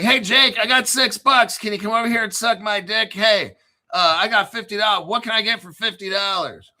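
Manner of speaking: play-acted, high, desperate begging plea. Speaker mocks desperate people offering money to Jake in a video, mock-desperate plea. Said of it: "These people are like so desperate".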